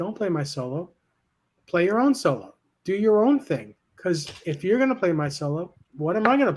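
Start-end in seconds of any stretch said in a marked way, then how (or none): none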